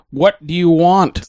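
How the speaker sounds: loud, high, shouty giant-monster voice. Voicing Anguirus answering Godzilla in a read-along scene: loud Anguirus voice. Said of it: "don't have to be so loud".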